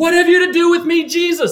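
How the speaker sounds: wild, very high, loud yell. Retelling how the man from the tombs yelled at jesus, retelling a loud yell. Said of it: "with an outside, really loud voice, yells".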